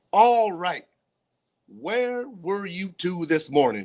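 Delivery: mad, growled voice. Narrating a story, Mr. Krupp confronts the two late boys in his office, growling. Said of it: "He growled".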